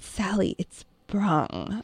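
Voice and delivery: put-on condescension. Retelling what the listener once said to correct a small child, mock-condescending. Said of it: "In this condescending".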